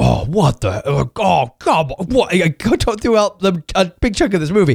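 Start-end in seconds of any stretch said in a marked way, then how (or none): 0.0-2.3 mock-irritated under-breath muttering, much slower. Retelling a younger guy behind him at a movie: imitating irritated muttering. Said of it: "I could hear under his breath".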